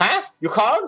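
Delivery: very high, loud, little goblin voice. Game narrator voicing a red goblin who appears behind the player: goblin voice. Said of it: "like kind of red goblin".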